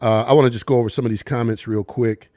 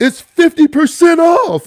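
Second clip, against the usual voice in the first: mock excited, voice-cracking, very high announcer voice; 6 dB louder than usual. Retell doing a voiceover in your new studio, trying to sound like him, imitating an excited voice, cracking. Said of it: "trying to sound like him when I got excited".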